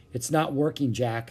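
ordinary delivery

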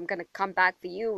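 normal talking voice

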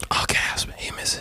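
mock shocked, hushed, breathless whisper with a gasp.

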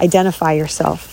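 normal talking voice

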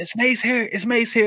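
play-acted high, carrying shout. In the front row at a concert, calling to a security guard, retelling own shout. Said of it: "and I shouted".

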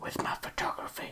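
soft, unvoiced whisper.

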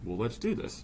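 put-on heavy, thick Persian accent, laid on. Retelling his reply to the speaker's venture fund idea, imitating a thick Persian accent. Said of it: "with his thick Persian accent".

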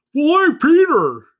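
loud, belted bad character voice with swinging pitch. Joking about a Family Guy bit: Joe Swanson voice. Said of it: "That was my Joe Swanson. It wasn't very good".

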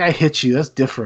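normal talking voice

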